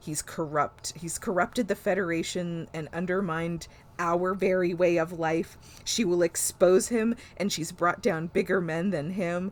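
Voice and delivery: ordinary delivery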